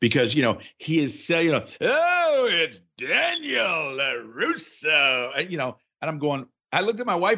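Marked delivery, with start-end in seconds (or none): 1.8-5.3 very slow, bombastic, over-the-top arena announcer voice. Imitating the announcer at the tournament: imitating an over-the-top announcer. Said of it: "that was actually a pretty good impression".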